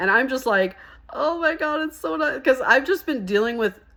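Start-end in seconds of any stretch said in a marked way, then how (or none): 1.1-2.4 mock choked-up, high, tearful gushing delivery. Retelling getting a kind message while out on a delivery: retelling own crying words. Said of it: "I'm crying".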